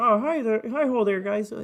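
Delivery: frog puppet character voice. Telling others Kermit is their spirit, doing a Kermit the Frog voice. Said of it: "Kermit the Frog here".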